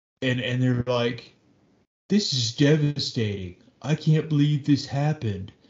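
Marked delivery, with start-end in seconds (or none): 2.1-5.5 level, flat monotone with no feeling. Mocking a person on the news after an event: mock emotionless statement. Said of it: "And there's no emotion".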